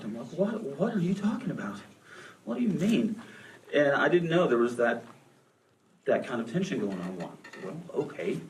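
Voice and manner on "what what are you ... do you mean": put-on stunned, bewildered, high shocked tone. Retelling a reply to a mother's tearful call: retelling own shocked reply. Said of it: "and I really am rather shocked".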